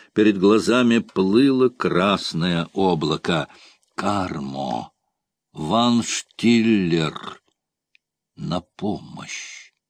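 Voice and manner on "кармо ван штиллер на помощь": barely audible half-whisper, low and slow. A wounded corsair calls to his companions for help, barely audible half-whisper. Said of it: "прошептал он, едва слышно".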